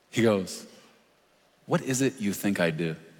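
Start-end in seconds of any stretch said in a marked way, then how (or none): 1.6-2.9 put-on sarcastic tone. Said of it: "the Lord sarcastically say".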